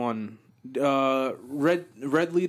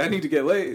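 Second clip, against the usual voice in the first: ordinary talk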